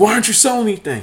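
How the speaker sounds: play-acted, high-pitched screaming. Retelling how he screamed at the speaker in the store, imitating screaming. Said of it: "he's screaming at me".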